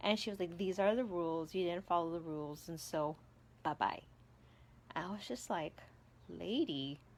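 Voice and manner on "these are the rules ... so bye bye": ordinary delivery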